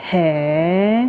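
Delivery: astonished, drawn-out, surprised hey. Explaining how to react when someone tells you something, surprised tone on hey. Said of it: "it's kind of like you're surprised at what somebody tells you".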